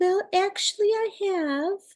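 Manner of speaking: very high, tiny, mouse-like squeaky voice. Retelling a woman's reply to a question, imitating her little mousy voice. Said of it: "And her little mousy voice".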